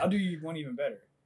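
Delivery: ordinary talk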